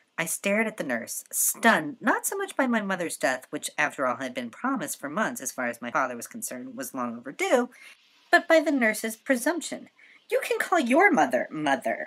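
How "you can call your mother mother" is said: sharp snapping voice with swinging pitch. A daughter answers the nurse who called her mother 'mother', snapped. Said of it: "I snapped".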